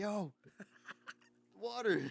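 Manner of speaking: mock shrill scream, very high pitched. Recounting yelling at someone who let the fish tank run low, retelling a scream across the room. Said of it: "I screamed at him like".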